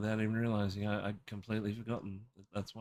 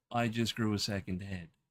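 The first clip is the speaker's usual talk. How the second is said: ordinary talk, nothing marked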